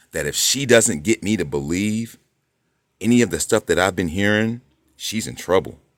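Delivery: ordinary delivery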